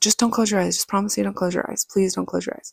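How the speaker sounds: panicked pleading voice. Speaker retells talking to an injured uncle, retelling panicked pleading. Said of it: "And just like freaked out".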